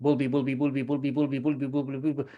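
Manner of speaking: rapid-fire, rattled-off, tongue-twisting repetition. Demonstrating a drill with a meaningless word, saying it as fast as possible. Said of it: "try to say it as fast as possible".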